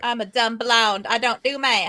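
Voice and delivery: put-on, odd southern-style country accent. Joking about working out a console discount, weird country accent. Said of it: "I had like a weird country accent when I said that".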